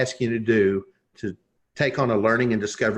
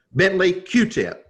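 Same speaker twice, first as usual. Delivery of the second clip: play-acted, very stern, no-nonsense, high-set delivery; 8 semitones higher than usual. Retelling a colonel's two-word answer, imitating a stern voice. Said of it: "in a very stern voice".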